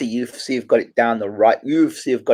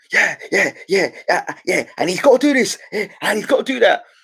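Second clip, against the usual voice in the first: hurried, rushed, higher-pitched patter; 8 semitones higher than usual. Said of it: "he talks the same all the time".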